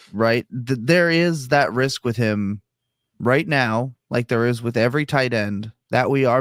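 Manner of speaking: ordinary talk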